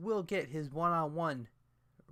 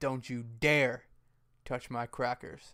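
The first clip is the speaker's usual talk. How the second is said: grave, utterly earnest, dead-serious voice; 3 semitones lower than usual. Speaker retells Rhino's reply to one of the Usos: mock-serious. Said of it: "in the most serious voice".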